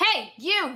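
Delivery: high-pitched shouted call. A narrator voices Lily calling after Conrad as he walks away, shouting. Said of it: "She shouts toward him".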